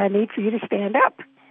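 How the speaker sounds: normal talking voice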